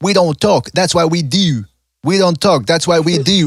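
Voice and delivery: heavy put-on Baltimore accent. Retelling what a trainer said: imitating a thick Baltimore accent. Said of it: "He's got that thick-ass Baltimore accent".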